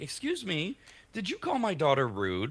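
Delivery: mildly confrontational, high and swooping. Acting out a mother who is being a little confrontational. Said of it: "she's being a little confrontational. Like".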